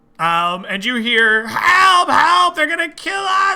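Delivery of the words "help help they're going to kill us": very high, frantic, panicked goblin yell. Voicing a goblin yelling for help during a fight: goblin yelling for help. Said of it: "And the goblin yelling stops".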